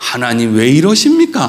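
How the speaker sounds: put-on very low, grave, solemn holy tone, swooping intonation. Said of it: "아주 근엄하고 아주 거룩한 어조로".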